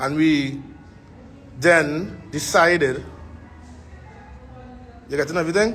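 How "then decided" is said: slow, deliberate, dictation-like pace. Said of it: "I'm speaking a little slow so you can write".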